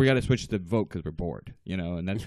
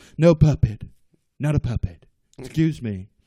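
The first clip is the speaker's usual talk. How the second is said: raised, louder debate-rebuttal voice; 2 semitones higher, 6 dB louder than usual. Retelling a debate reply in a Donald Trump impression. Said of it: "And your rebuttal".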